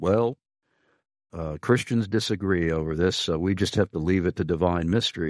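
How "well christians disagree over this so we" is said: ordinary delivery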